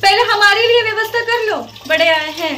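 high, shrill, heated shouting. In a scene, arguing back at someone who says he must make arrangements, shouting. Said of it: "यार तुम चिल्ला क्यों रही हो".

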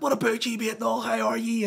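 put-on Belfast accent. Retelling own greeting to a stranger: imitating a Belfast accent. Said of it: "you give it the whole Belfast thing".

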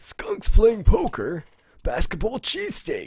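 put-on high-pitched old guy voice. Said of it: "I should try to do an old, older guy voice".

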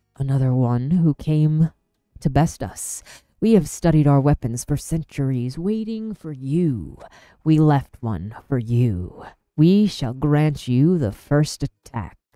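booming, loud, resonant hushed whisper. A guard in red monologues at the narrator before a fight, in a booming whisper. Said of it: "monologued in a booming whisper".

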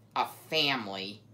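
snarled with contempt. Aerith stares at the beavers and speaks, snarled with contempt. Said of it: "he snarled with contempt".

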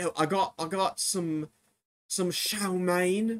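slow, teasing mock British food-vlogger voice. Mocking how food vloggers in these videos open: imitating British food vloggers. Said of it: "and then they get like".

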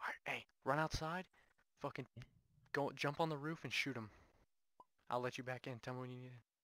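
hushed whisper. Playing a game with teammate Riley, giving quick instructions: whispering. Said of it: "I'm whispering".

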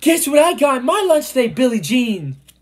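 very high, proud shout. A narrator reads a first grader on the bus calling to another first grader; yelling. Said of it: "she yelled to another first grader".

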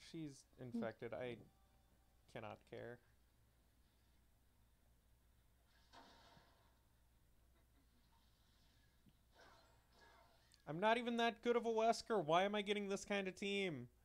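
voice full of pain. Player complaining about the team they got while playing as Wesker, pained voice. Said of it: "The pain in your voice".

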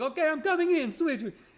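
put-on Italian accent. Speaker quotes the coach stepping in to switch, in a fake Italian accent. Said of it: "I'm making him sound Italian".

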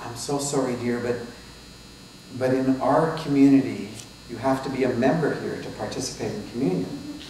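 usual speaking voice

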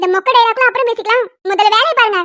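shouting, scolding tone. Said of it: "அப்பா, கத்தாதடி".

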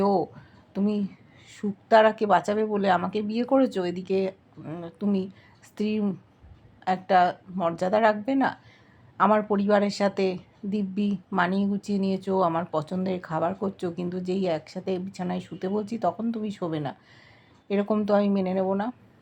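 usual speaking voice

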